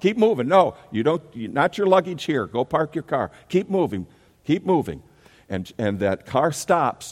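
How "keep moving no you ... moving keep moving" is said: put-on high, barking, uniformed-guard shouting. Describing a uniformed man keeping traffic moving, retelling a traffic guard's yell. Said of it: "he's yelling".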